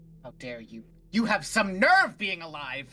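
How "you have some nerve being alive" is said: acted angry shouting, rising in loudness as it goes. Playing a character hearing a voice in their head: yelling in character. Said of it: "Are you yelling at someone in particular?".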